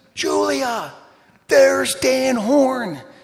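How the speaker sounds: very high, drawn-out, top-of-the-lungs yell. Retelling how the church kids-group leader yelled out during a run: retelling a yell. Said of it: "she yells at the top of her lungs".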